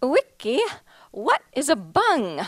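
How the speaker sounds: put-on sing-song Swedish accent. Retelling the gallerist's question after a show in Sweden, imitating the gallerist's accent. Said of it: "I have to say this in her accent".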